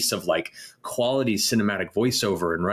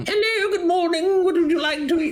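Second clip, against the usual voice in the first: super silly, goofy put-on voice, much higher; 4 dB louder than usual. Recalling doing voices at breakfast with their dad, super silly voice. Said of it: "Like super silly".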